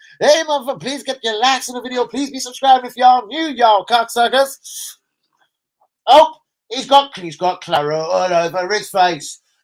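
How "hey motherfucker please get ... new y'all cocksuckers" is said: put-on American accent, pitched up. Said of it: "is this guy American?".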